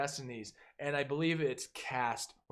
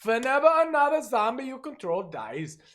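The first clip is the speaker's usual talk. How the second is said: exaggerated German accent, very high, loud and booming; 10 semitones higher, 9 dB louder than usual. Reading a commander card's text aloud: over-the-top German accent. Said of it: "I am going to talk about this card with German accent over the top".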